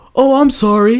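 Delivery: high, loud, fake sorry tone.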